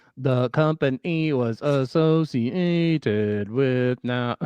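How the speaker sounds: very loud synthetic robotic computer voice. Offering to read a company description aloud, then reading it in an AI voice. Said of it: "read that in an A I voice".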